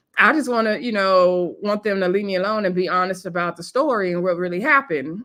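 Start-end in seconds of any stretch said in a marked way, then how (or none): none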